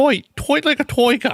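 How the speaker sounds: put-on very high-pitched, botched Dutch accent. Asked whether that was an Australian accent, the speaker tries Goldmember's Dutch accent. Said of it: "that was trying to be Dutch".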